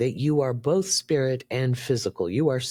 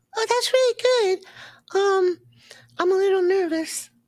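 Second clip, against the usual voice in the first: put-on childlike puppet voice, much higher; 3 dB louder than usual. Laurie welcomes Elmo to read a comment; speaker answers in Elmo voice. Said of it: "I'm going to have Elmo read the comment".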